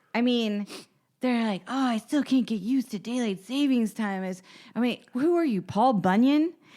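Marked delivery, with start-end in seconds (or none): 1.7-4.3 mocking overdramatic tone. Doing a comedy bit about people dramatic over daylight savings time, mocking voice. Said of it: "you are doing a mocking voice in the bit".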